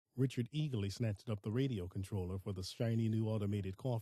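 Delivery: ordinary delivery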